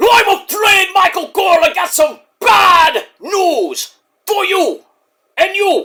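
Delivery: put-on high-pitched Jamaican accent. Doing an impression meant to be british, which comes out sounding jamaican. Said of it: "my impression sounds like a Jamaican".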